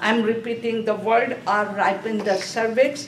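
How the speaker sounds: plain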